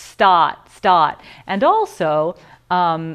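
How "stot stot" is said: non-rhotic Boston accent, louder. Explaining accents in conversation, demonstrating a boston accent. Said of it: "a Boston accent".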